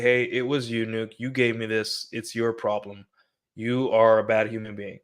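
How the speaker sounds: normal talking voice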